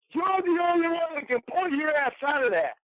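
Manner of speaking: furious, high-pitched, angry yelling. During a heated argument, one person yells at another, yelling angrily. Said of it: "I don't know why you're yelling".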